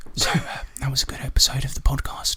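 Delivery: breathy ASMR-style whisper. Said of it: "Are you trying to do A S M R".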